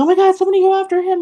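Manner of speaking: very high-pitched scream. Retelling what a woman cried out after her purse was grabbed, retelling her scream. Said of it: "she was screaming".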